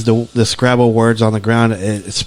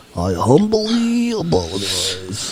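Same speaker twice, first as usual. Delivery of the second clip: put-on Russian-sounding accent with swooping pitch; 5 dB quieter than usual. Apologizing as a joke: put-on russian accent. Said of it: "What did I sound Russian for?".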